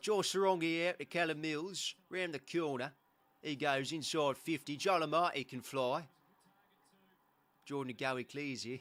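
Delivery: loud Cockney accent, commentator patter. Australian speaker showing off commentating a match in a Cockney accent. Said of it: "I can commentate in a Cockney accent".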